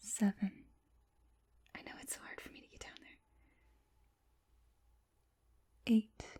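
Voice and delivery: close whisper, right by the ear. Checking on a patient again after asking them to follow the light, whispering in their ear. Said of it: "I'm gonna whisper in your ear again".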